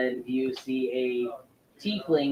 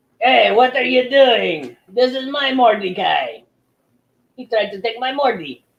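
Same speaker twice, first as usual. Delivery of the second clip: put-on Russian accent, very high and very loud; 9 semitones higher, 11 dB louder than usual. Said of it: "now he's just coming out Russian".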